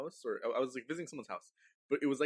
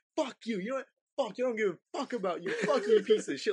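very high-pitched, goading, taunting voice; 11 semitones higher, 7 dB louder than usual. Retelling a scary night, acting out insulting a ghost to egg it on: acting out taunting. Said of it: "Like trying to egg it on".

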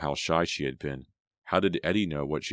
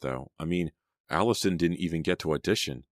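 usual speaking voice

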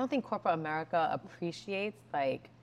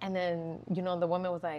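ordinary talk

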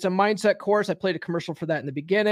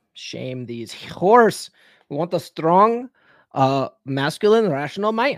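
slow put-on Russian accent; 3 semitones lower than usual. Repeating a guest's favorite line after the clip plays: imitating Elena's Russian accent. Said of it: "Elena's, uh, Russian accent".

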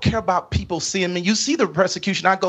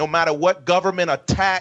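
plain

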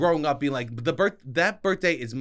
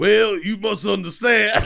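loud, high-pitched Southern drawl; 6 semitones higher, 7 dB louder than usual. Showing the only Southern accent they know, the speaker does a Foghorn Leghorn Southern accent. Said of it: "the only South I know is".

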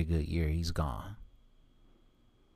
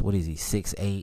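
ordinary delivery

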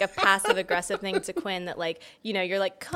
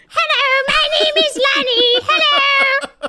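very high, very loud, shrill, booming talking-dog voice; 10 dB louder than usual. The speaker shows the voice their dog has, a talking-dog voice. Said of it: "My dog has a voice".

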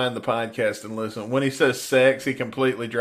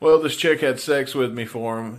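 ordinary talk, nothing marked

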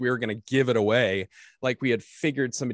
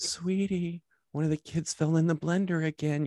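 higher, super tender, sugary sweet voice; 5 semitones higher, 3 dB quieter than usual. Imitating a wife waking someone for bad news: imitating wife's super tender, sweet voice. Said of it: "she has this voice that's super tender and sweet".

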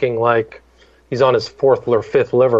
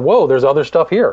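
ordinary delivery

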